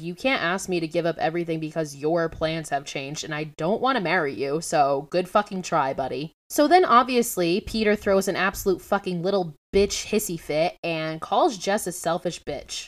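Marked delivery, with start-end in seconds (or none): none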